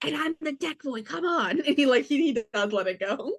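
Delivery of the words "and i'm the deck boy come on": whispered, much quieter. Playing a character in a tabletop game, speaking to the side, whispering. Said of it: "He's just gonna whisper".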